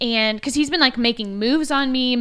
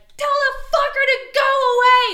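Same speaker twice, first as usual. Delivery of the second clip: put-on very high, very slow, drawn-out, berating drunken shriek; 3 dB louder than usual. Retelling a drunk guy berating a cop: mock-screaming at a cop. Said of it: "Like he's like screaming at this cop".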